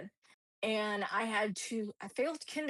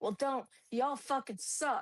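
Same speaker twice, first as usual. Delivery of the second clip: mock drunk voice, higher pitch; 4 semitones higher than usual. Retelling what a drunk science teacher said on the first day: imitating a drunk teacher. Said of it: "She was drunk".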